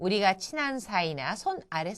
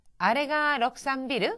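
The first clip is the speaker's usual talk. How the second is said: pitch rises at the end of 럭산비르; 6 semitones higher, 4 dB louder than usual. Japanese lesson, asking if that is the 63 Building: rising end of 럭산비르. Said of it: "약간 요 뒷부분을 올려줍니다".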